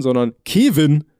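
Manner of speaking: odd stress on Kevin, drawn out slow and loud.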